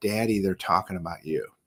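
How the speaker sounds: quiet low whisper. A father recalls his son at his award, retelling his son's whisper. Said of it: "he whispers in my ear".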